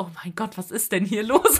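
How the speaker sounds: mock gossipy whispering. Speaker retells what the cinema ushers whispered in the queue, retelling a whisper. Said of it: "tuscheln gehört".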